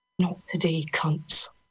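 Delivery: whispering. Narrator reads her line as she grabs them, over the noise: whispered. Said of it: "whispers over the noise".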